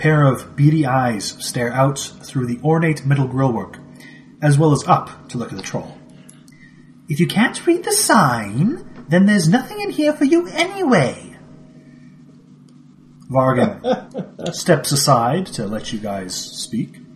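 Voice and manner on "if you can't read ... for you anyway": dainty, prim, light sing-song voice, drawn-out sign. Someone peering out through a door's grillwork answers the troll in a prim, light voice. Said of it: "It's a very prim, light voice".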